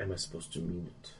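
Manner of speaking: very quiet, barely audible whisper. Voicing a character speaking privately into another's ear: whispering. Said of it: "He whispers in your ear".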